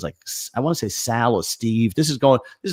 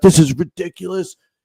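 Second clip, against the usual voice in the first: mock fed-up grumbling, loud and pitched up; 6 semitones higher, 5 dB louder than usual. Retelling a man in his sixties cursing at the nurses, the speaker does mock-angry cursing. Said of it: "he's like fucking cursing".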